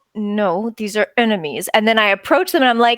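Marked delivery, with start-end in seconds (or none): 0.2-1.7 hushed, private, under-the-breath muttered aside. Answering the game master's question in character, muttered under breath. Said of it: "under my breath, I go".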